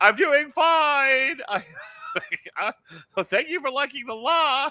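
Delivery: put-on high, slow yell, drawn out, as if distant. Retelling shouting across the room during a partner's live stream: imitating own screaming. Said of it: "I'm just screaming from across the room".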